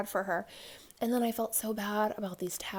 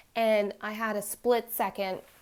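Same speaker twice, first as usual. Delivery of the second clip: ordinary talk, nothing marked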